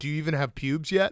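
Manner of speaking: whispered. Retelling a press conference moment where Daniel whispers to Lando: imitating Daniel whispering. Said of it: "whispers to Lando".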